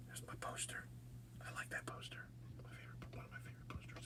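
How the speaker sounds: fast, hurried, breathy whispered aside. Speaker pointing out their favorite poster to viewers, whispering. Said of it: "I don't know why I'm whispering".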